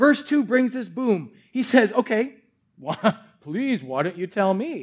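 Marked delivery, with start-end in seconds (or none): 1.9-4.8 put-on dripping sarcastic politeness, sing-song pleading. Acting out Paul's question to the church: acting out sarcasm. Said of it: "Sarcasm right here".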